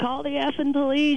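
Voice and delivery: put-on screaming. Retelling screaming at a neighbor crossing the parking lot; retelling a scream. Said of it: "I'm screaming at her".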